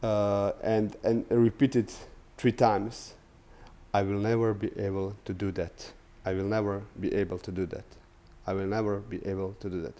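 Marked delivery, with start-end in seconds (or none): 3.9-9.9 soft, sorrowful, mournful tone. Speaker demonstrating for listeners, repeating a phrase three times in a sad tone. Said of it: "say this with a sad tone".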